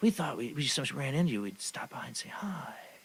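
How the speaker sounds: creepy, unsettling, odd way of talking. Retelling a couple's visit at the door, imitating their odd way of talking. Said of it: "they talk like this and look at me".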